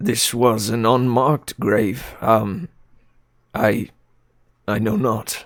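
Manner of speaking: trembling, unsure, slow, quivering voice. Narrator voicing a character asked whose grave it is, quivering unsure voice. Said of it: "you hear like yeah a quivering in his voice".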